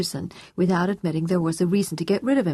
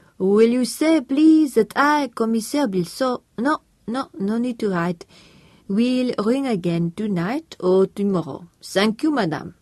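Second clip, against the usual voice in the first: slow, carefully held put-on French accent; 4 semitones higher than usual. Reading a character phoning as a French police officer: French accent. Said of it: "kept up his French accent with care".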